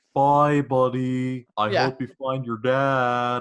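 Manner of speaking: loud, goofy voice with drawn-out "dad". Retelling a favorite movie scene: silly narwhal voice from Elf. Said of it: "the silliest voice ever".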